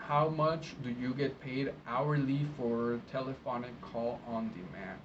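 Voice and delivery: ordinary talk, nothing marked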